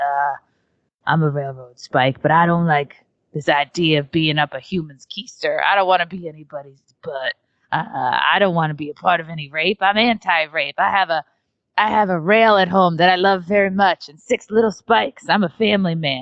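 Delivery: raspy, scratchy put-on voice. Recalling a costume, the speaker voices a personified railroad spike: scratchy voice. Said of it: "like scratchy voice".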